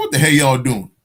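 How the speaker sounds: ordinary talk, nothing marked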